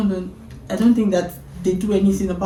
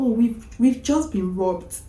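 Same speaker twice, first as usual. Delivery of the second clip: put-on offhand, unbothered, casual, calm tone; 2 semitones higher, 3 dB quieter than usual. Retelling the husband's words after a robbery: imitating a casual, calm tone. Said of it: "in the most casual, calm way".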